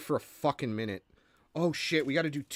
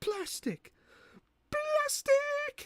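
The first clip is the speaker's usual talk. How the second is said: very high comic voice, played for laughs. Attempting a voice joke about plastic, the speaker uses a high-pitched joke voice. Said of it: "I cannot do high pitched voice jokes".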